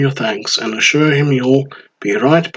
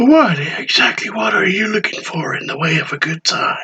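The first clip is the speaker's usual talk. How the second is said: sudden shift to gentle, pitched-up tone; 6 semitones higher than usual. Narrator reading a story, the bartender questions the customer in a suddenly soft voice. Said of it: "In a suddenly soft voice".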